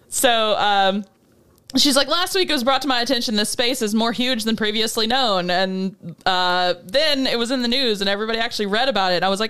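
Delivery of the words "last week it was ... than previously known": normal talking voice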